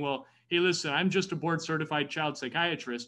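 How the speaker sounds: ordinary talk, nothing marked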